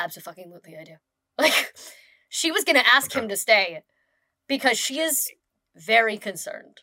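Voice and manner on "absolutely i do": dead-serious flat deadpan, very low and quiet. Speaker retelling a woman's answer when asked if he should stay: imitating deadpan seriousness. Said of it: "She with deadpan, completely fucking serious".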